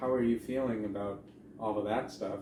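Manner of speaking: plain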